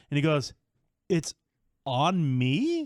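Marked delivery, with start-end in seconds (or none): 1.1-2.8 rising question tune on "me". Retelling someone's offer to pay, imitating a questioning rise. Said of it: "I didn't say it with a question mark".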